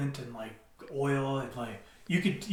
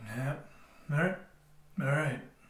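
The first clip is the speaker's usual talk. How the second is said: deadpan, flat, monotone short answer. Answering a mock interview question, imitating Blair's monotone one-word answers. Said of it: "Blair interview mode".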